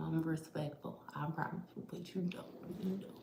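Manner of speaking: hushed voice. Praising the listener quietly while mother is in the room: whispering. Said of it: "I'm only whispering 'cause my mama in the room".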